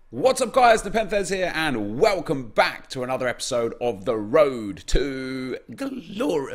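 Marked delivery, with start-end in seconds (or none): 1.6-6.6 voice breaking and cracking on a word mid-sentence. A youtuber welcomes viewers to another episode of his series, voice cracking. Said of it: "excuse me, voice crack".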